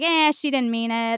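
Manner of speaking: ordinary delivery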